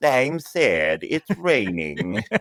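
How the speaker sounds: every word dragged, very slow. Visiting someone else's booth during a rain delay; Droopy Dog voice. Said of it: "Droopy Dog".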